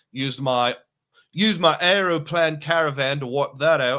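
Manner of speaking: sudden switch into Australian accent. Talking through travel bookings, slipping into a sudden Australian accent. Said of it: "I got an Australian accent all of a sudden".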